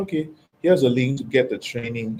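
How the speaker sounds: ordinary talk, nothing marked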